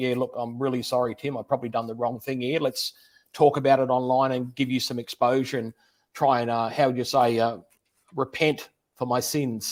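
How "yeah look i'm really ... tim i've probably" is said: ordinary delivery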